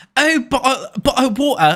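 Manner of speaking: high, loud, squeaky Victorian pauper British accent. Mocking how Americans do British accents, the speaker puts on an Oliver Twist pauper accent. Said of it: "some kind of like Victorian pauper thing".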